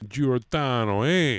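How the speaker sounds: put-on Jersey accent. Riffing on a man's typical Philly Italian name, in a Jersey accent. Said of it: "Jersey accent".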